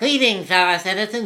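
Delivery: put-on New England accent. Speaker mocks a man from videos who mocks him; put-on New England accent. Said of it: "It's all speeded up".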